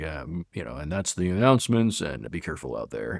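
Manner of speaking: deep, low, scary man's voice. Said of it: "he had this like deep voice".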